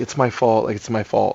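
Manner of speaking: put-on sobbing voice. Retelling what the crying grandma said at the scene: imitating someone crying. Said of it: "and she's crying, and she's like".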